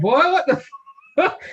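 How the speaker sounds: acted, very high-pitched holler of disbelief. Recounting watching a scene with friends, retelling a holler of disbelief. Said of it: "I started hollering like".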